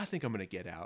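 hushed, really soft, low murmur. Retelling what someone said before walking out, really softly. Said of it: "he just goes really softly".

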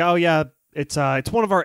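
mock-dismissive delivery. Retelling what a film character says; imitating a very dismissive remark. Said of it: "he says it very dismissively".

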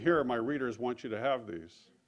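ordinary talk

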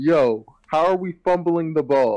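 acted high-pitched scream. Retelling watching a show, acting out screaming at the TV. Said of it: "I was screaming at the TV".

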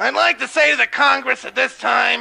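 high, loud voice, choked, like something stuck in throat. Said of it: "sounds like he has a person caught in his throat".

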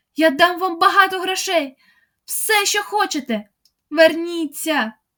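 high, calling out at full force, all-out shout. Calling into the darkness for them to come back, shouting with all her strength. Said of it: "скільки стало сил гукнула Марта".

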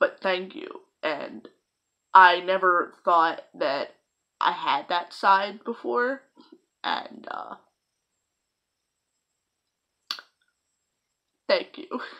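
crying while talking. Thanking people in a video message, crying while talking. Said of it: "I'm crying again".

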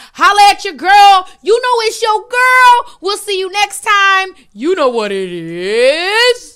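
loud, high-pitched, belted, drawn-out voice. Closing a stream in a celebrity's voice: Keke Palmer voice. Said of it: "I'm gonna do it like Keke Palmer".

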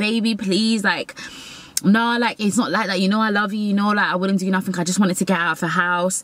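mock imploring, begging, pleading voice. Retelling begging a partner who had just ended things: retelling begging. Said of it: "I started begging".

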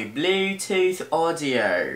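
put-on, fake, non-American foreign accent. Showing how he speaks to his voice assistant so it understands: fake non-american accent. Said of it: "she doesn't understand it in American".

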